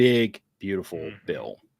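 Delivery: sarcastic, swooping sing-song tone. Repeating the phrase after being told to mark it: sarcastic. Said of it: "I should have put the air quotes up".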